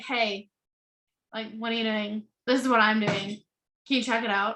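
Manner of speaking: low, blunt, level monotone with no lift. Showing a bad way to approach somebody: blunt flat monotone. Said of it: "you're so blunt and monotone and you're just like".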